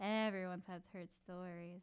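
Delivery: low, creepy delivery.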